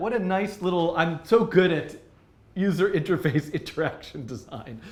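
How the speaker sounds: slow, drawn-out sarcastic self-satisfied tone. Praising own interface design after running the demo, sarcastic. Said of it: "I'm being sar-, sarcastic".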